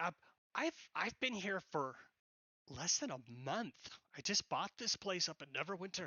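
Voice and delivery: terse, curt, slightly put-out tone. Alicia, who just bought the bar, answering Nasir: curt, a bit upset. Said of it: "So, [name]'s a bit curt, / She yells at one of the guys that look bending over the bar. / Yes, we bought the bar there. I bought it from the previous owners. / So, [name]'s a bit curt".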